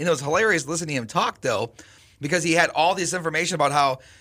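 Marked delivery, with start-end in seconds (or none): none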